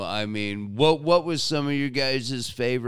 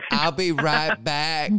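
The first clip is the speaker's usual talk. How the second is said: put-on easygoing American southern accent; 4 semitones higher, 3 dB louder than usual. Retelling to someone what Peck says, in Peck's southern accent. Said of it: "he's got this, like, southern accent".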